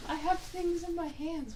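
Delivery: mock voice, very high, soft, slow squeak.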